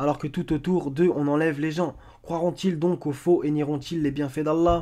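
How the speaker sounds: ordinary talk, nothing marked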